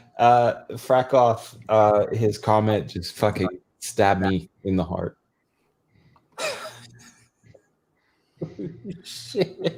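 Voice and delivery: giggling, laughing while talking. Reacting to a comment on a show with guests, laughing while talking. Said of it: "I'm sorry, I'm laughing".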